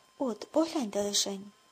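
plain

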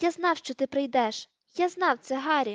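happily exclaiming, gleeful shout. A ragged man jumps down from a fireplace, greeting an expected arrival; joyful exclamation. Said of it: "радісно вигукнув".

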